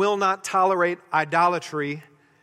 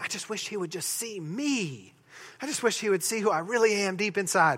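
put-on soft young teen girl voice; 6 dB quieter than usual. Speaker illustrates a point with a junior high girl impression. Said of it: "That's my best junior high girl impression".

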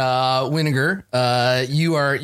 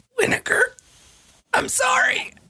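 faint, barely voiced dying whisper. Retelling a dying character's words as garbage covers him, whispered. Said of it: "And he just whispers".

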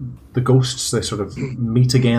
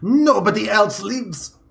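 shrill, very high, angry in-character yell; 10 semitones higher than usual. Voicing a furious character slamming the door: shouting in character. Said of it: "he shouts again".

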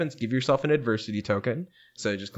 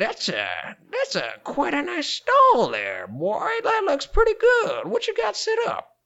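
put-on old man character voice; 5 dB louder than usual. Game narrator voicing the supervisor who greets the player at his stall, as Old Man Archie. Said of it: "you hear the voice of your only supervisor, Old Man Archie".

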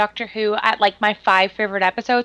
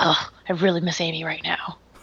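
muttered aside, lower and much quieter; 5 semitones lower, 5 dB quieter than usual. Viewer recalling a moment from an episode, mumbling like Peter Capaldi's Doctor. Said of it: "mumbles under his breath".

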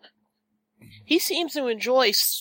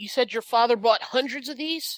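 ordinary talk, nothing marked

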